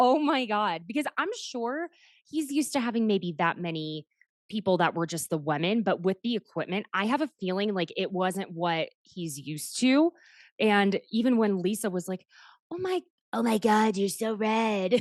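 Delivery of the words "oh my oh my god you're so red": put-on tiny, little cartoon superheroine girl voice. Retelling what Lisa said to a man: imitating Lisa's little Powerpuff Girl voice. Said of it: "with her little Powerpuff Girl voice".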